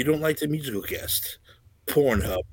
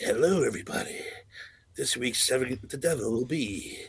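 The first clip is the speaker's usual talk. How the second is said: put-on, slow, cool, drawn-out devil voice; 2 semitones higher than usual. Talking with Eric, the speaker tries out what a devil voice would sound like: cool devil voice. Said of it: "if we had a cool devil voice".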